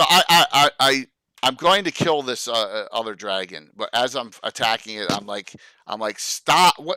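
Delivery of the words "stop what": put-on yelling, as loud as possible. Speaking as their character while attacking a dragon: yelling as loud as possible. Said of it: "I yell out as loud as I".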